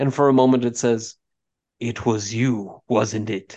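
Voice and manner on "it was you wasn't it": eerie, unemotional monotone undead voice. Voicing a Lich that stares at a player: creepy unemotional Lich voice. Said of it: "with that very creepy, unemotional skull looking at you way".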